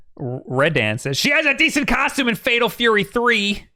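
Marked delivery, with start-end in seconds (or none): 1.2-3.6 high-pitched nerdy voice. Reading a chat comment aloud: Conan O'Brien nerd voice. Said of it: "give him the Conan O'Brien nerd voice".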